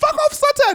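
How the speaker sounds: very high, shrill, very loud blurted yell. Retelling how grandmother curses in church: imitating grandmother cursing. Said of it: "She'll be like".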